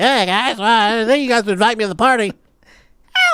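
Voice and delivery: tiny, high, little newborn kitten voice. Speaker gives a part of his own body a voice: a newborn-kitten voice. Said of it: "My dick sounds like a newborn kitten".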